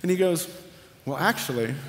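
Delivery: ordinary delivery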